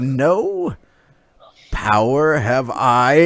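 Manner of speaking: slow, menacing snarl with a long drawn-out "no". Game narrator voicing her reply to the player: snarling. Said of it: "she she she snarls at you".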